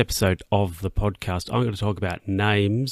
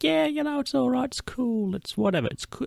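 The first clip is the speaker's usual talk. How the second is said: much higher, easy, breezy brush-off. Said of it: "And you're like".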